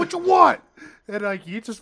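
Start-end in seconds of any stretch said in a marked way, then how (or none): 0.0-0.6 put-on aggressive voice, higher and louder. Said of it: "in your face".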